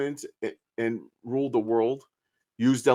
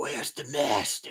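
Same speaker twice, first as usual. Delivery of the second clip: creepy, stern whisper, groggy and low; 7 dB quieter than usual. Recounting people who said a line strangely, the speaker imitates them: put-on deep groggy whisper. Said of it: "they tried to make a deep voice. They're like a groggily".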